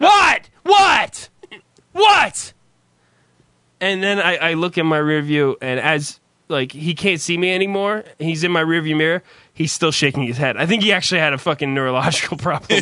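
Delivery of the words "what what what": mock, very high, loud, frantic shriek. Retelling screaming through glass at a man shaking his head, retelling screaming through glass. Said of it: "I start screaming through the goddamn fucking glass".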